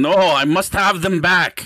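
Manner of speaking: put-on screaming. Playing a character trying to wrest something from another's hands: screaming in character. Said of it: "he starts screaming".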